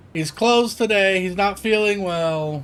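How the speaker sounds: distant female voice. Narrator voices someone answering a knock at the door next door: distant female voice. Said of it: "in the distance a female voice go".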